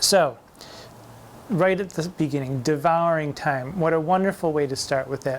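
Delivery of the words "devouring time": hard d and t in devouring time, devouring rising. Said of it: "very hard D and the very hard T".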